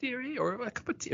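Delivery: put-on sweet, very high, soft grandma voice.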